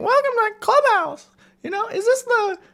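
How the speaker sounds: high, squeaky cartoon voice. Retelling how a bro-like guy greeted them, the speaker does a Mickey Mouse voice. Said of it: "spits you with like Mickey Mouse voice".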